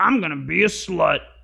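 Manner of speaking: rough, croaky, creaky put-on seductive voice.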